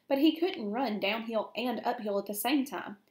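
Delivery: plain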